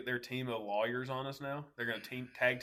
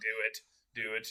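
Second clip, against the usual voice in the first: put-on sinister villain voice; 2 semitones lower than usual. Joking that Mister Rogers wears a hooded cloak, like Palpatine: Mister Rogers as Palpatine. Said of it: "like Palpatine".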